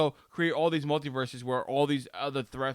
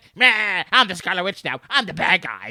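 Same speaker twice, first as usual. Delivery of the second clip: put-on loud, belted, high-pitched old lady voice; 5 semitones higher, 9 dB louder than usual.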